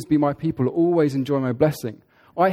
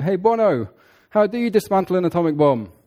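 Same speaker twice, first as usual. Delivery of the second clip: teasing, mocking, called-out tone; 3 semitones higher than usual. Retelling how an artist called over to [name] backstage, retelling a mocking call. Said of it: "like calls over in a mocking tone".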